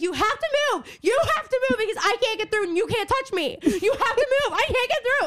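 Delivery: put-on shrieking, very high pitch, insistent. Retelling being cornered in a line by a girl, reenacting screaming at her. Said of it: "And I'm screaming at her".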